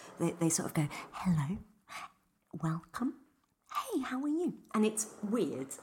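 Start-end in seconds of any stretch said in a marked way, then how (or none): 1.1-4.5 slow, high, close-mic ASMR whisper. Imitating how people talk in asmr videos, close to the mic: imitating an asmr whisper. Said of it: "I'll do it now, what they're like".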